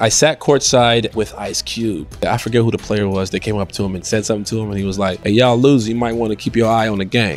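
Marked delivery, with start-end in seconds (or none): 5.2-7.4 grave, cold, serious, matter-of-fact, not joking. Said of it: "He said it with such a serious look".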